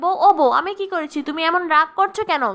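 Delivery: ordinary delivery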